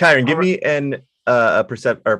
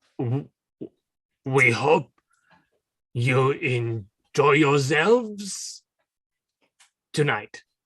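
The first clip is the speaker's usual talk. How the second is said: put-on French waiter voice, French accent; 7 dB quieter than usual. Playing a waiter giving the camping permit, asked to be French: French waiter voice. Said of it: "a seven's worth of effort in terms of being a French waiter".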